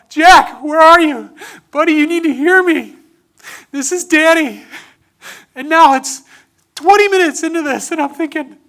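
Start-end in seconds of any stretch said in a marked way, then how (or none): 0.2-4.7 loud, high, far-carrying calling yell. Retelling getting up after falls in the woods: retelling a yell. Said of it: "I'd get up and I'd yell".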